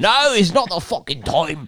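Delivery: put-on Scottish accent, very high-pitched. Trying out accents on the same line, speaker uses a scottish accent. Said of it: "That's Scottish".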